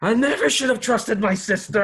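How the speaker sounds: very high, loud screaming ghost voice. Narrator voicing a ghost as it gets sucked back, in a screaming ghost voice. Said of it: "this kind of this voice kind of screaming".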